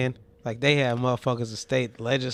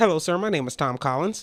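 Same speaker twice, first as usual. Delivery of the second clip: put-on polite customer-service voice; 4 semitones higher than usual.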